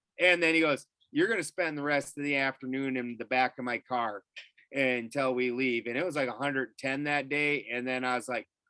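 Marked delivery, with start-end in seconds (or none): none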